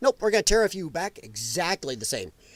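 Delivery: ordinary delivery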